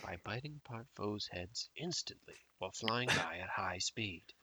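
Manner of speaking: soft, hushed nature-documentary narration. Reading a Pokédex entry on a podcast in a bad David Attenborough nature documentary voice. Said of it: "I wish I had a better David Attenborough nature documentary voice".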